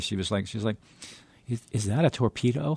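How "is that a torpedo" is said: mock-sad voice with a questioning tone. Retelling a woman's question from a book, imitating a sad, questioning voice. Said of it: "this sort of like you know, sad, questioning voice".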